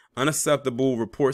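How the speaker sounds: ordinary talk, nothing marked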